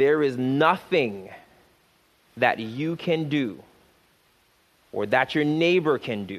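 very slow, deliberate, word by word. Speaking to the listeners, promising to say it slow: very slow. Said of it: "I'm going to say it slow".

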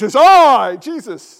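put-on booming, proclaiming, very loud old English accent. Imagining Jesus answering people who doubt it is him, as Jesus in old English accent. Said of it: "with old English accent".

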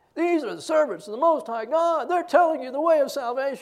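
high, loud sarcastic mockery. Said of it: "with sarcasm".

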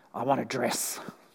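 hushed, low, very quiet, rough gruff voice. A homeless woman, asked if she needs help, answers: gruff voice. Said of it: "said the woman in a gruff voice".

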